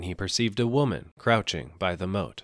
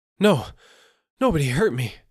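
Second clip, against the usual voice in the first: loud, high, breathless panting, gasping for air; 8 semitones higher, 8 dB louder than usual. A man flung down at the soba seller's feet answers him, panting. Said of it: "panted the other".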